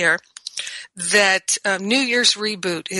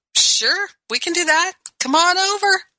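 much higher, cheerful voice. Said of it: "And my friends would be like".

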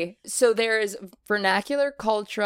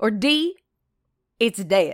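slow, drawled put-on Texas Southern accent. Read out the last answer option about a Southern phrase, in a Texas Southern accent. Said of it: "I really believe that was Texas Southern".

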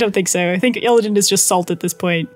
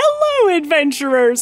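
put-on forced cheerful tone; 4 semitones higher than usual. Imagining the character greeting adventurers: imitating Illidan's forced smile. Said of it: "Illidan having this super forced smile".

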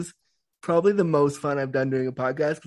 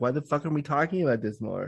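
ordinary talk

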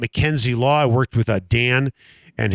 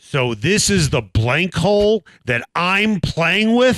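play-acted, very loud, teasing, joking tone, pitched up; 7 semitones higher than usual. Retelling a remark made at the first tee: imitating Mike Bohn speaking loudly. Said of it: "Mike says very loudly".

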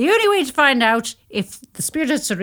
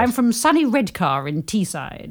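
ordinary talk, nothing marked

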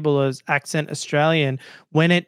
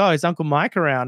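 usual speaking voice

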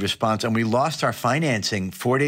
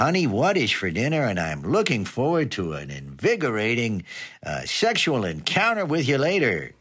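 swooping ballgame announcer voice. Imagining how a baseball announcer talks at home: Vin Scully announcer voice. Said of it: "Do they talk like that when they go home?".

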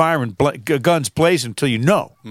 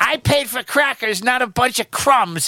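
very high, cartoon-style voice; 11 semitones higher than usual. Retelling a man's complaint letter to the Ritz cracker people, in a Mort Goldman voice. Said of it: "sound like Mort Golden from Family Guy".

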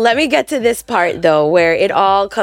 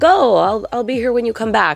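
plain

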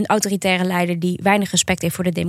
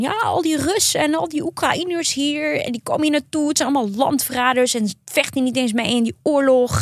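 acted, high-pitched, raging, ranting and raving; 7 semitones higher than usual. Recounting a man at a bus stop, retelling his street rant. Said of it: "die tierde echt op straat".

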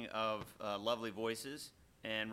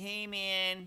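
loud, high, nasal hippie voice; 9 semitones higher, 5 dB louder than usual. Imitating how a hippie talked: imitating a nasal voice. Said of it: "his voice was so, like, nasally".

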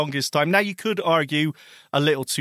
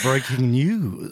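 slow, low romantic love voice. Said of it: "You did the voice".

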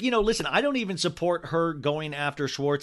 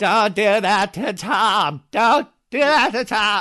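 shaky, wobbly, shrill, very loud voice; 6 semitones higher, 9 dB louder than usual. Imagining her going up against verbal assassins to defend Tom, imitating Raquel's shaky voice. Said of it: "with her shaky voice".

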